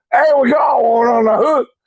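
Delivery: very high-pitched swamp hunter character voice. Retelling a swamp trapping scene, doing the voice of the guy who talks like this. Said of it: "and he talks like this".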